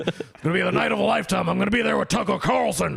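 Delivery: put-on gruff shouting radio voice. Retelling voicemails left for a friend in Alex Jones voice. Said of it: "leaving him messages in Alex Jones' voice".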